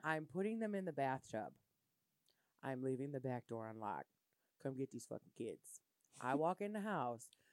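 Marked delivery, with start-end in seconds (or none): 0.0-5.6 low, quiet, put-on calm with seething anger. Retelling what she told the speaker, imitating calm seething anger. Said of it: "you could tell the seething anger in her voice".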